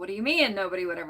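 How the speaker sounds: mock, dripping, heavily sarcastic delivery. Quoting characters in a play: imitating sarcastic delivery. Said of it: "kind of sarcastically saying it".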